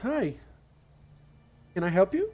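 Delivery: gentle, kindly voice. Narrating a scene where a gnome opens the door to a visitor, in a very kind voice. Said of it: "says in a very kind voice".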